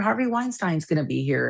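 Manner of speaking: usual speaking voice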